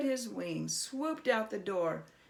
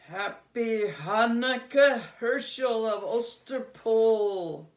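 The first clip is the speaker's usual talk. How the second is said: horrible cracking-bones voice, very loud; 3 semitones higher, 9 dB louder than usual. Reading a story, an unseen voice greets herschel in the night: voice like cracking bones. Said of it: "a voice that sounded like the cracking of bones".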